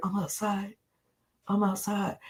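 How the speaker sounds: barely audible, hushed half-whisper, very quiet. Retelling what someone said on camera: imitating someone half-whispering. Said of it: "when Robert was in the earshot".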